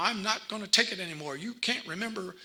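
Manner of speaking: acted-out, fed-up, frustrated screaming outburst. Quoting a family member screaming at their mom while driving, imitating someone screaming. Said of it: "I'm screaming at mom".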